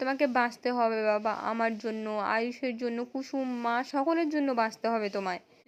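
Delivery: plain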